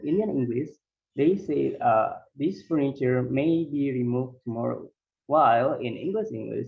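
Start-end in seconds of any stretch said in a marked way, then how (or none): none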